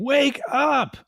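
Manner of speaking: mock woman's screech, shrill, pitched way up. Recalling a movie scene where she screams at him: imitating a woman screaming. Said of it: "her screaming".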